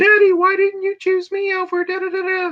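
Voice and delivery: put-on small girl's voice, very high. Recalling a bit that used to freak him out, speaker quotes in a little girl's voice. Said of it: "I could do the little girl's voice".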